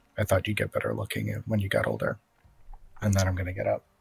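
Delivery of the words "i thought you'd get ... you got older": very quiet, low, hushed murmur. Playing a character in a role-play scene, speaking to another character: very quiet. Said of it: "very quietly say".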